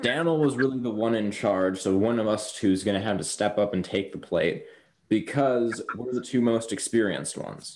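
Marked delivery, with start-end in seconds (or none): none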